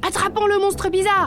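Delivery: shouting. Narrator reads the tiny bear calling out after the polar bear crashes, yelling. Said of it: "Hurla le tout petit ours".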